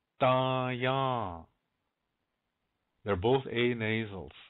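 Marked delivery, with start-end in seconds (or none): 0.2-1.4 very slow, each syllable stretched out. Letting learners hear the two nasals: really slow. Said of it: "I'll say it really slow".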